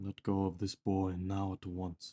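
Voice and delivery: raspy, low, quiet voice. Describing how the patron sounds, in a raspy patron voice. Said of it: "your patron sounding a lot more raspy".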